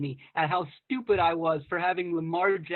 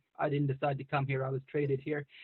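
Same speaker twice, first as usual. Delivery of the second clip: put-on very monotone, flat, toneless delivery; 3 semitones lower, 7 dB quieter than usual. Quoting his answer to a reporter at a press conference, in a very monotone voice. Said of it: "in a very monotone voice".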